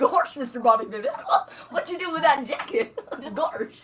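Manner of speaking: dopey, dim-sounding cartoon dog voice. Prompted by the group, speaker shows off a Goofy voice. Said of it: "I do a mean Goofy".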